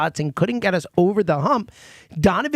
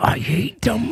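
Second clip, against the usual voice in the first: put-on bitter, vehement, venomous, hate-filled tone; 3 semitones higher than usual. Retelling a caller's words to the others, imitating vehement hate. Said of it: "there was real, like, vehement hate there".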